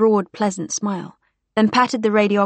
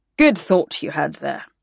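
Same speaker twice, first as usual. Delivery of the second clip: usual speaking voice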